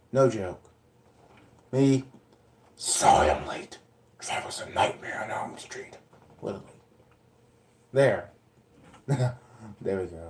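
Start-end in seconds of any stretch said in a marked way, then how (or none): 2.7-5.9 airy, breathy put-on performed character voice. Showing he can literally do the voice: put-on character voice. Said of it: "That was the voice".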